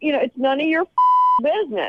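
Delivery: angry, getting mad, yelling. Retelling an argument with a date over dinner: retelling her own yelling. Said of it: "and I'm just start yelling".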